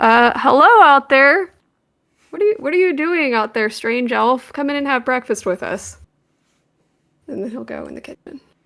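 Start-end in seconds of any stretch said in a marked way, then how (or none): 0.4-6.0 booming, magically amplified-sounding voice. A character calls a strange elf in to breakfast: magically booming voice. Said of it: "use thaumaturgy to make his voice boom".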